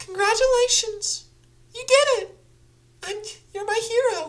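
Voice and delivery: full falsetto, very high and loud. Trying out voices for a character line, falsetto. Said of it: "falsetto for sure".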